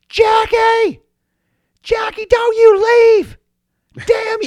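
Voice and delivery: shrill, high, dragged-out, furious angry yell. Retelling a women's wrestling match, act out Sable coming out at Jackie, imitating Sable yelling, pissed. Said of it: "Sable comes out and she is pissed".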